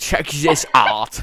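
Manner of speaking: lively, zesty put-on German accent. Reading a fan story aloud, voicing Prussia's reply: zesty sounding German accent. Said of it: "a very zesty sounding German accent".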